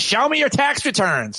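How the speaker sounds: shrill, very high, shouted yelling. Retelling a story, the speaker acts out a woman's reply: imitating a woman yelling back. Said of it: "yells right back".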